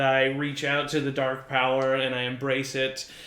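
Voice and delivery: ordinary talk, nothing marked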